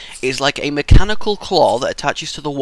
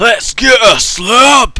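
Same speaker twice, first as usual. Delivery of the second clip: slab said loud and high in a Scottish accent; 9 semitones higher, 7 dB louder than usual. Picking the next thing to get, the speaker announces it in a Scottish accent. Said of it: "you need to say slab in a Scottish accent".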